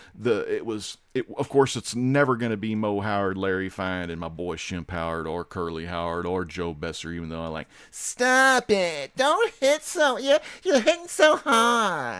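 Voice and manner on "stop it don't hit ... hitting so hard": very high cartoon voice, dragged out hard. Showing how a Three Stooges comedian sounded: Joe Besser impression. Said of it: "doing my SpongeBob voice, but put a little Besser onto it".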